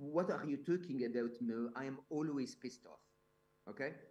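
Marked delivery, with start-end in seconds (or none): 0.0-3.0 light, put-on French accent. Retell the world's happiest man answering whether he's always happy, imitating a little french accent. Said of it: "with his little French accent and said".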